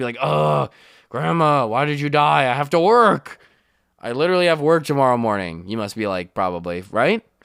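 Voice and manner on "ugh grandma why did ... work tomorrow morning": exasperated, put-out, annoyed whining. Mocking a listener whose grandma died, voicing them as mock-annoyed. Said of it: "You must be super annoyed".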